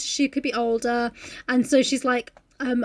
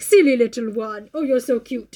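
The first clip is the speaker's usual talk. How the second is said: put-on patronising, talking-down voice; 3 dB louder than usual. Retelling how Maxim talks down to her like a child: imitating Maxim talking down. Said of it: "he's very patronising".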